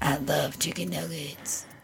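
very low, very quiet throaty devil rasp. A friend cuts into advice with a joke, in a scary devil voice. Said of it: "It's like a scary devil voice here".

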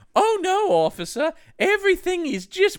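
very high, drawn-out British female voice. Retelling a movie scene as the mother phoning police: Terry Jones British woman voice. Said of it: "it just turns into Terry Jones and Monty Python, my impression".

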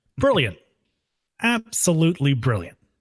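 swooping, sing-song pitch swinging up and down. Delivering a line as Raiden, a host asked for it: imitating Raiden saying brilliant. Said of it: "I'm gonna let you deliver it".

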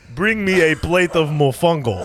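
loud put-on Puerto Rican accent tinged with Russian. Joking about accents, trying a Puerto Rican dad voice: put-on Puerto Rican accent mixed with Russian. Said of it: "Russian mixed Puerto Rican dad".

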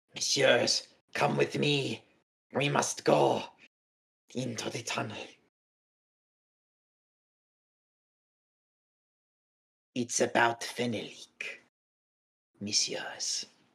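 creature voice, entirely whispered. A game master voices a creature addressing the players, creature whisper. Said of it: "And it just whispers".

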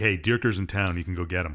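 ordinary talk

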